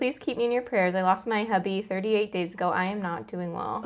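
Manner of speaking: normal talking voice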